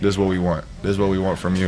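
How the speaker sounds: ordinary delivery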